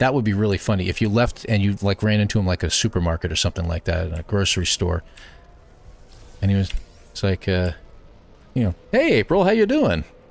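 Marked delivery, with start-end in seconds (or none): 8.9-10.0 animated, highly inflected, sing-song expressive voice. Imagining him greeting april in a grocery store: imitating a suddenly inflective voice. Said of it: "suddenly he's got a completely inflective voice".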